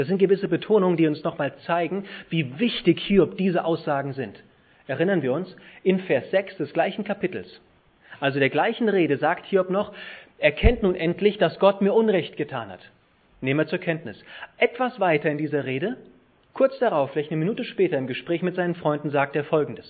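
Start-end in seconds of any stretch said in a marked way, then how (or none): 10.4-12.9 Gott hit loud and high with Hebrew stress. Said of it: "ich betone jetzt das, was im Hebräischen als Betonung da steht".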